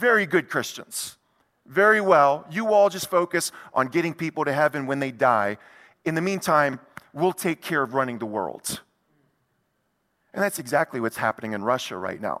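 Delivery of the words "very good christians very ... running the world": ordinary delivery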